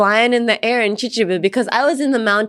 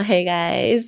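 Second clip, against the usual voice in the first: put-on seductive, sexy tone, lower; 4 semitones lower than usual. Joking that her raspy allergy voice sounds sexy: mock sexy voice. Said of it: "maybe it's a bit sexy right now".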